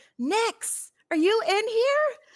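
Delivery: high, far-carrying call. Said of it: "I just yell out".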